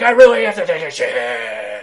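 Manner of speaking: very loud, violently strained, forced-out yell. Speaker compares wrestlers' voices with a co-host: violently constipated Warrior voice. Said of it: "Warrior sounded like violently constipated".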